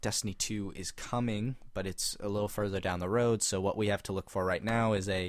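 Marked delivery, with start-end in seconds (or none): none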